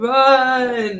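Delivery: put-on slow southern voice. Answering a joke about Tom Hanks in the movie: Forrest Gump voice. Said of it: "Imagine Tom Hanks doing the Forrest Gump voice".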